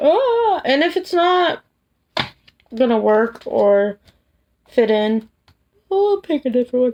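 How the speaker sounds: talking through a yawn. Tired after work, speaker explains the question categories: yawning while talking. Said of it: "Sorry for me yawning".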